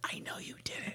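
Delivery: barely audible, very quiet whisper. Retelling a mourner's line after condolences: imitating a whisper. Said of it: "And then the whisper".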